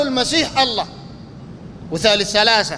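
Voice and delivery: ordinary talk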